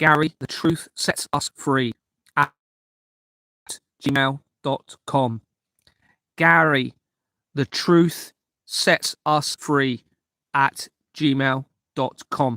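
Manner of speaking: slow, deliberate, carefully paced, each word separate. Speaker repeating an email address for listeners, speaking slowly. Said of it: "the reason I'm saying it so slowly".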